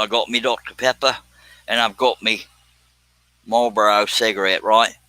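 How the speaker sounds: put-on Australian accent. Joking to a live chat after a shrimp on the barbie comment: put-on australian accent. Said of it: "This is me Australian voice".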